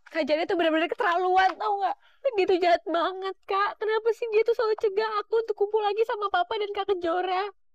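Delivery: tearful, high-pitched, crying through the words. Pleading with an older sister to see papa, crying while talking. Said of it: "kamu jangan nangis lagi".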